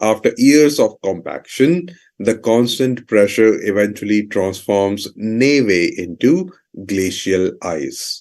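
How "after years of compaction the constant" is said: usual speaking voice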